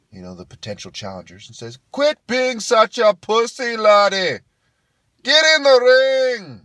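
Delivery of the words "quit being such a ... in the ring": acted, high, shrill, slow, booming, furious Irish yell. Describing a crowd, an Irish guy goads the potential challengers: imitating an angry Irish guy. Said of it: "another Irish guy starts getting mad".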